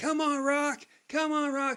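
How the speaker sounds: very high, loud yelling call. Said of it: "as he's screaming for Rocky".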